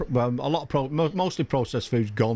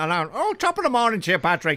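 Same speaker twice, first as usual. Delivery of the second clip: jokey, satirical, fake put-on stage Irish accent; 7 semitones higher than usual. Retelling what a man said to Patrick, who isn't even Irish: put-on Irish accent. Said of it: "Patrick's not even Irish".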